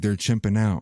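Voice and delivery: put-on whispering voice. Retelling a short video clip where a woman leans in: imitating a whisper. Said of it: "whispers to the camera".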